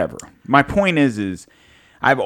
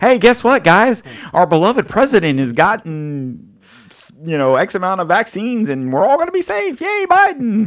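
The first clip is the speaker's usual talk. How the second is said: very high, sing-song, fake-cheerful tone; 10 semitones higher, 3 dB louder than usual. Asked to sound more positive about vaccines, mock cheerful announcement. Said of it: "label that as a little more positive".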